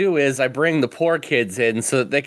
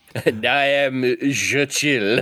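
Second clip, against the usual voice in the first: put-on French accent. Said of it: "every mobster with a mustache in Gotham City has a French accent".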